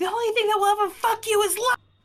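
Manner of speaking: shrill top-of-the-lungs bellow, very high. Casting vicious mockery on a creature: yelling at the top of lungs.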